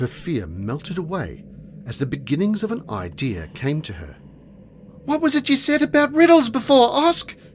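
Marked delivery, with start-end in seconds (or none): 5.0-7.3 very high, shrill, full-throated loud yell. Finding her courage during a threatening advance, she yells a question. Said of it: "she yelled".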